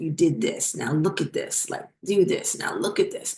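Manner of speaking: dropped, deep, breathy whispered nonstop berating tirade. Retelling how the boss suddenly went at the speaker: imitating a boss's voice going much deeper. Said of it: "his voice went five octaves deeper".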